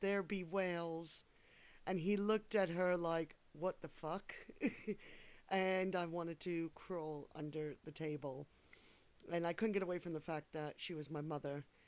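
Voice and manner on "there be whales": heavily laid-on, put-on fake Scottish accent. Retelling his mother's remark about a movie the man was in: fake scottish accent. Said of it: "she put on a fake Scottish accent".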